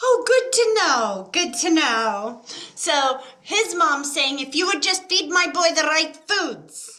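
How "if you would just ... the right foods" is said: put-on Irish old woman voice, r's rolling. Repeating a grandmother's words to a listener: attempted Irish accent, rolled R's. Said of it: "that rolling of the R's".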